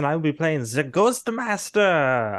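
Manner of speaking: put-on German accent. Introducing own role in the game: put-on German accent. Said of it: "I don't know why I went German for that".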